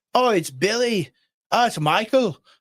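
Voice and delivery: put-on poor, slow Irish accent. Retelling a video, the speaker quotes irish people asked a question: attempted irish accent. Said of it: "I can't do an Irish accent".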